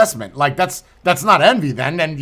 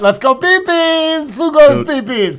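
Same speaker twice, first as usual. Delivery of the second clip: mocking baby talk, higher; 11 semitones higher, 4 dB louder than usual. Mocking a man who talks to his dog: imitating baby talk to a dog. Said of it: "a grown-ass man that talks like that".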